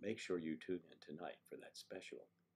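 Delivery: FM-style radio DJ promo read. Speaker says pollen gives them an FM radio voice, then uses it. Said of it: "gives me that F M radio station voice".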